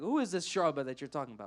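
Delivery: scornful, demeaning, contemptuous, belittling tone. Retelling a man asking who shu'bah is: imitating a demeaning question. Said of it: "very demeaning".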